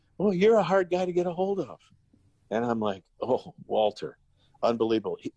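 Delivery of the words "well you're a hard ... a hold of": small, high little voice. Retelling a phone call from Walter, who was dying, in Walter's small little voice. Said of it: "this little voice goes".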